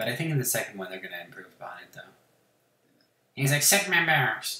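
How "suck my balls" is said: loud, high-pitched cartoon-style voice. Quoting a game character's line: Cartman voice. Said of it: "Like Cartman".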